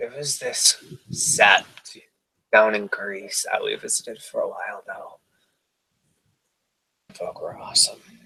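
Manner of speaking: wistful. In a role-play, a character speaks in a wistful voice. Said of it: "She says in a very wistful voice".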